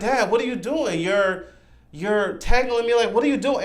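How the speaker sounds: high, tearful, crying pleading voice. Retelling a movie scene, a daughter pleading with her father: imitating a girl crying for help. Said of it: "she's crying for help".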